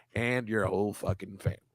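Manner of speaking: very low, soft voice. Insulting an actor with a line from Godfather 2, Senator Geary impression. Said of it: "That's my imitation of that guy".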